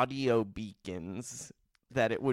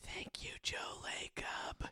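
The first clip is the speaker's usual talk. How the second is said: mock whisper, quieter. Retelling a bedtime routine of holding up a phone: imitating own whisper. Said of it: "I hold up my phone and I whisper".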